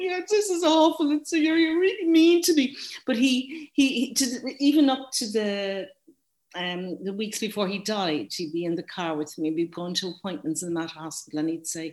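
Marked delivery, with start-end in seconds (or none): 0.0-2.8 very high, loud, tearful crying outburst. Retelling being scolded while learning to drive: retelling tearful outburst. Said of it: "I'm bursting into tears going".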